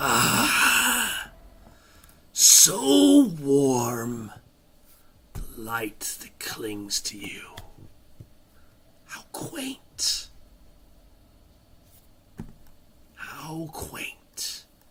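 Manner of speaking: voice with echo. Voicing a voice that echoes through the caves: echoing voice from the caves. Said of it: "A voice echoes through the caves".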